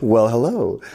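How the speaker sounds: mock-surprised voice. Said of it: "typically you say".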